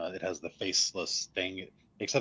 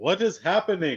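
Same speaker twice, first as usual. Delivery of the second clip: alarmed call, high and loud. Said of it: "you hear Casimir call out".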